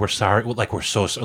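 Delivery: normal talking voice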